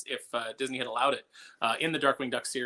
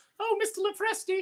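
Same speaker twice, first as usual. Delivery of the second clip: put-on wide-eyed child voice, higher. Retelling first meeting an artist as a wide-eyed kid: imitating own younger wide-eyed self. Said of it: "this wide-eyed kid who was like".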